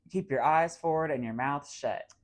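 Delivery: plain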